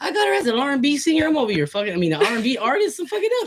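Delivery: amazed mock panic, high, fast and excited.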